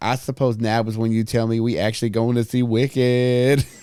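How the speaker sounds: loud, full-blast, fake put-on girl voice.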